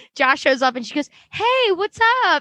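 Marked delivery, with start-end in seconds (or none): 1.3-2.4 very high, fake girly voice. Recapping an episode, acting out Margo's greeting in a fake girly voice. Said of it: "this like fake girly ass voice".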